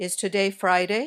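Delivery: pitch rising at the end on Friday. Teaching yes/no question intonation: rise on Friday. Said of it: "These questions usually have rising intonation. Your voice goes up at the end".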